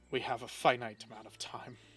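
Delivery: muttering under the breath. Voicing a shop owner as the players leave: muttering under his breath. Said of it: "You hear under his breath".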